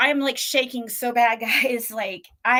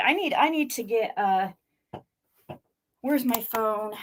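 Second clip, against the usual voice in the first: trembling, shaking badly, quieter; 2 semitones lower, 4 dB quieter than usual. Reacting to shocking news while shaking badly. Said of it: "I'm shaking so bad right now".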